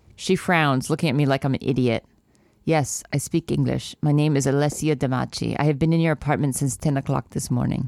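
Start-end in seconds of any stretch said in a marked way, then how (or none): 2.7-7.9 low, poor put-on Polish accent, voice dropped. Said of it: "that was my poor accent".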